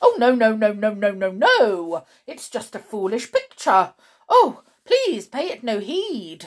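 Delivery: very loud, rattled and flustered voice. A girl asks to see an old photograph and a man refuses: flustered. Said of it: "Mr. Stink was becoming increasingly flustered".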